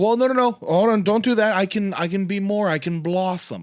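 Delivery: heavy put-on Italian accent. Retelling a show, the speaker quotes a performer answering the host, heavy Italian accent. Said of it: "very heavy Italian accent".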